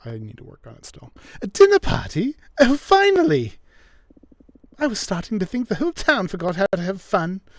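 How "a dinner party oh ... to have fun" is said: put-on vampire voice with British accent. Voicing the vampire Elvira at a dinner party invitation: British accent as Elvira. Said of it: "I need to give her a British accent".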